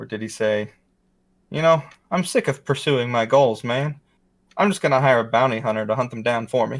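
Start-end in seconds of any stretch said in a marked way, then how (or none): 1.5-6.8 put-on comic delivery with a Southern accent creeping in. Quoting a comedian's possible joke in a quiz game: imitating Mitch Hedberg, sounding Southern. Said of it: "That sounded Southern".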